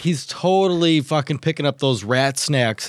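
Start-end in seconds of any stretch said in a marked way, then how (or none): none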